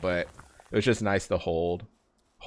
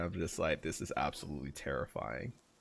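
ordinary talk

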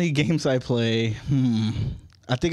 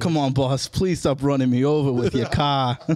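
put-on Boston accent. Describing the assistant who keeps calling the speaker boss, imitating Juan's Boston accent. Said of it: "a little Boston accent".

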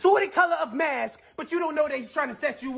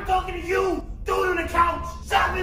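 mild, shouty, hollered yell; 3 semitones higher than usual. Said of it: "Why is he yelling?".

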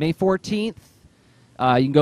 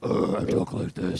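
slow, breathy, hushed, drawn-out seething villain growl; 11 semitones lower, 5 dB quieter than usual. Complaining about a movie villain, the speaker mimics him in a seething Cookie Monster voice. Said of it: "the seething Cookie Monster voice villain".

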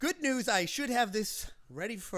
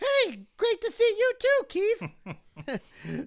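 very high, loud, bouncy, swooping puppet voice; 6 dB louder than usual. The ventriloquist's stapler puppet answers Keith's greeting, in a Stapley puppet voice. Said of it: "that's your sentient stapler puppet".

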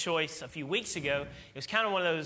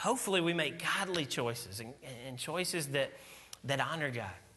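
usual speaking voice

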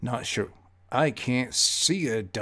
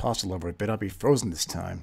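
plain

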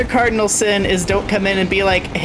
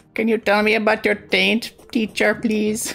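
put-on Indian accent. Jokingly asking the teacher a question, in a put-on indian accent. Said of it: "the accent you did when you said that".

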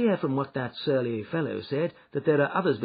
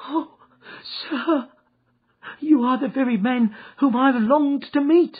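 very high-pitched, loud cry; 12 semitones higher, 7 dB louder than usual. A little fellow greets the man he has been seeking, crying out. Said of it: "cried the little fellow, with outstretched hands and quivering fingers".

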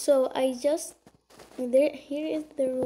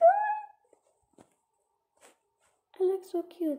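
very high, swooping, thrilled excited gush. Having just turned into a baby on the tablet, excited. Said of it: "I'm very excited".

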